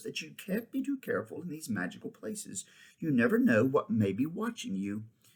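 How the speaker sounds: ordinary delivery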